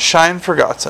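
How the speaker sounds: ordinary delivery, nothing marked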